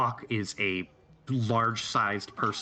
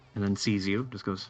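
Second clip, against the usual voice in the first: plain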